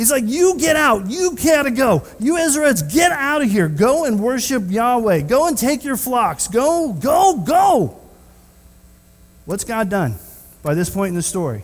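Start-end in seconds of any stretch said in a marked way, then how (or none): 0.2-8.0 loud, high-pitched, drawn-out, commanding yell. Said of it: "He yells these three terms".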